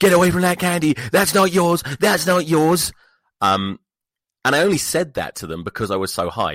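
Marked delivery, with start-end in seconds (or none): 0.0-2.9 very high, tearful screaming cries. Speaker retells what they yelled at them while high, imitating screaming and crying. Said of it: "just screaming and crying".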